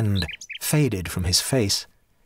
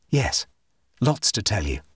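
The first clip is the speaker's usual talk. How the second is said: plain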